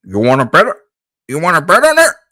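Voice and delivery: loud, high, sliding singing. You want to try channeling Kermit and end up giving up: attempted Kermit the Frog voice. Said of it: "I can channel my Kermit".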